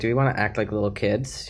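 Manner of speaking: plain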